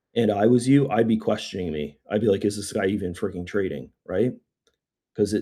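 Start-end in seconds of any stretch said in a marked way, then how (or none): none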